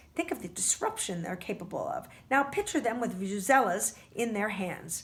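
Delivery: plain reading voice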